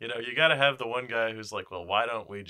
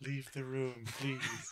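soft, sultry tone; 3 semitones higher, 10 dB quieter than usual. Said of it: "she talks very low, sexy voice".

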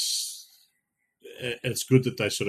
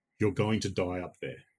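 put-on deadpan. Quoting Regan's line to the astronaut guest, imitating her deadpan delivery. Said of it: "very chilling and completely out of it".

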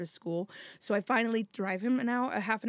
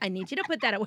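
put-on voice mimicking a poor, bad-sounding recording. Retelling hearing a phone play back a recording of oneself: imitating own voice in a shitty recording. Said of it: "hear myself in a shitty voice being like".

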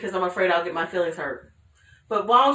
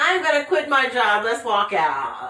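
demanding, entitled complaining tone. Talking about cancel culture, the speaker acts out a complainer in a Karen voice. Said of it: "that's a Karen voice".

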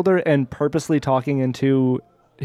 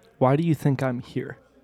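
whispering, quieter; 4 dB quieter than usual. In the game scene, the character keeps speaking to him: whispering. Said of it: "I'm still whispering to him".

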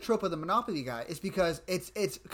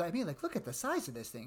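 put-on cute, sweet, innocent tone, quieter; 7 dB quieter than usual. Retelling a character's line after a hard cut: imitating a cute innocent tone. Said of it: "he goes very cute and innocent".

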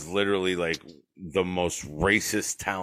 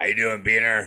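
loud voice, much higher and louder; 3 semitones higher, 6 dB louder than usual. Speaker recalls how their dad greeted them, imitating dad's loud voice. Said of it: "my dad with his loud-ass voice".

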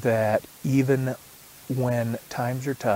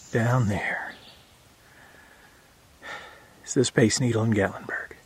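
breathless, out of breath. Narrating while hiking a trail in the Smokies: out of breath. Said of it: "I'm a little out of breath".

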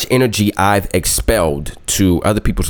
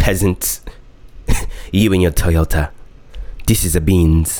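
haughty, snooty, nose-in-the-air put-on snob voice. Playing a fancy-car driver with nose in the air, in a mock-snooty voice. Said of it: "I don't know why I'm talking like that".

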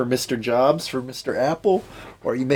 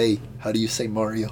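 usual speaking voice

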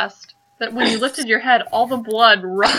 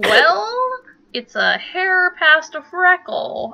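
put-on high, slow old woman voice, drawn-out "well"; 6 semitones higher than usual. The game master voices an old woman answering a player's question, in an old woman character voice. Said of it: "It's an old woman, and she's wearing her night clothes. / It's an old woman, and she's wearing her night clothes. She looks pretty pissed. / It's an old woman, / It's an old woman, / She looks pretty".

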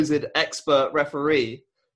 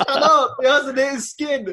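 play-acted screaming, pitched-up high yell; 10 semitones higher, 4 dB louder than usual. Speaker recalls yelling back at people on TV, retelling screaming at the TV. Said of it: "I'm just screaming at the TV".

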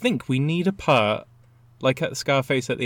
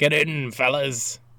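rough, gruff, tough dog character voice. Voicing a dog with a cigar on a tank: gruff dog voice. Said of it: "I think your dog sounds gruff like that".

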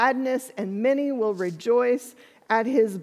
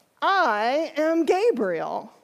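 slightly defensive tone; 4 semitones higher than usual. Voicing the angel Gabriel answering Zechariah: a little defensive. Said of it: "says just a little defensively".

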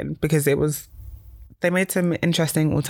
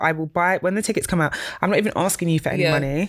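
plain

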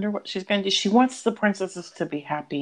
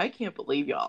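acted upset tone, lower, quieter; 2 semitones lower, 5 dB quieter than usual. Recounting your reaction to a character's death in a Disney movie, retelling being upset. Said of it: "I was genuinely upset".

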